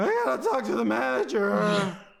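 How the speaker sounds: put-on very high, loud teen voice, squealed slowly. Showing how the actor sounds, like the teenagers from The Simpsons: imitating a Simpsons teenager. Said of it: "He sounds like the teenagers from The Simpsons".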